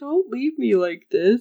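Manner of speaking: put-on sad voice. Retelling a stuck character's line: imitating a sad voice. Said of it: "He sounded so sad all of a sudden".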